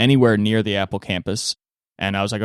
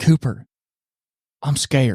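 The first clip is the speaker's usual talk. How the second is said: frightened, worried, fretting voice; 4 semitones higher than usual. Retelling what a bedmate says at night: imitating a scared hushed voice. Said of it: "you speak in a hushed voice".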